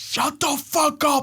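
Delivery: mock angry outburst, losing temper. Retelling his wife snapping in the car: imitating wife losing her temper. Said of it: "she fucking loses her mind".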